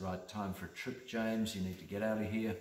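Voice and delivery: ordinary talk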